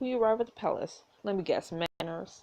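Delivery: ordinary delivery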